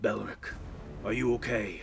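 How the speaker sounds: great dragon voice calling. A narrator voices the dragon mother looking down toward Belric, in a loud booming voice. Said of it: "you hear a loud, booming voice".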